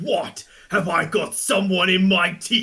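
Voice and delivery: very slow character voice, each word drawn out. Quoting a game champion's voice line so convincingly it sounded played: Renekton voice line impression. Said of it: "how did you play the voice line then".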